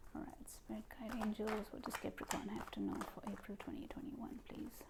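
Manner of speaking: soft, hushed, pleading whisper.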